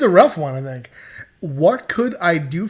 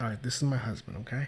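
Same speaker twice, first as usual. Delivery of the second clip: very soft, hushed, secretive half-whisper; 6 semitones lower, 14 dB quieter than usual. Showing how to introduce someone while leaning in close: half-whisper. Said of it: "bring your voice to a, a whisper".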